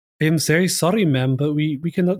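terrible put-on French accent. Imitating a tv actress playing a lady: terrible put-on french accent. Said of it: "That's my terrible French accent".

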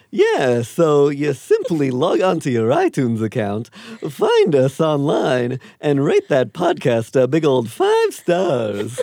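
loud, swooping, sing-song, lisping cartoon-lion pitchman voice. Podcast host asks Snagglepuss to address the listeners, answered in Snagglepuss voice. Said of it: "Snagglepuss, while I got you here".

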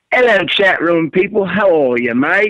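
put-on British accent. Greeting the chat room after being asked for a shout out: British accent. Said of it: "There was his British accent".

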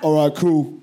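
very deep, imitated voice. Retelling a woman's reply in a queue: imitating a very deep voice. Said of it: "the deepest, fucking most bulging voice I've ever heard".

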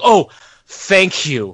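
overdramatic, gushing, overly polite, swooping high. Retelling a commentator thanking a colleague: imitating overly polite thanks. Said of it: "so polite and overly dramatic".

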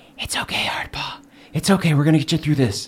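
hushed whisper, very close, right at the ear. Calming a possum mount in character by whispering into its ear: whispering. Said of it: "I whisper into its ear".

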